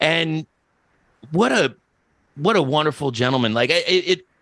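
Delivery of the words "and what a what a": plain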